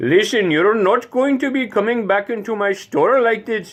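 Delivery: put-on very high-pitched Indian or Pakistani accent. Imitating someone from India or Pakistan working in a store, Indian or Pakistani accent. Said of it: "someone from India or or the Pakistan region ... maybe somebody's working in a store".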